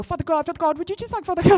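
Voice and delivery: put-on jittery, repetitive babble, rushed, high and nervous. Retelling praying over someone's shoulder, imitating nervous praying. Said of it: "when you're nervous".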